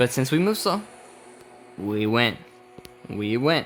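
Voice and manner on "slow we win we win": normal talking voice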